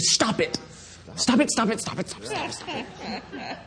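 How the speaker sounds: acted, urgent, insistent, intense whisper, repeated over and over. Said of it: "the same intensity that Paul is writing".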